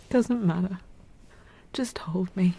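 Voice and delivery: tearful, weeping, crying voice. Asked why she is crying, she answers and asks to be held, crying and tearful. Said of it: "Why are you crying?".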